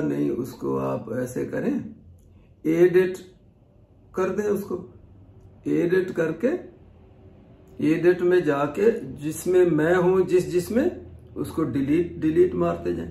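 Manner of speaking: put-on slow-paced, drawn-out boy's tone.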